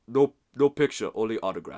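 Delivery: put-on very loud, accented, dismissive barked-out brush-off. Retelling a player refusing a photo: imitating Alex Len's accent. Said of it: "in his accent".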